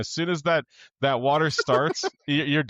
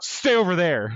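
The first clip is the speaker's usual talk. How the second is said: nasty, mean, curt, snapped delivery; 4 semitones higher than usual. Retelling grabbing someone on a boat about to sink, acting out a mean snap. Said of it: "And I said it so mean".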